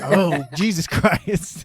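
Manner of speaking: slow, laughing, shocked exclamation.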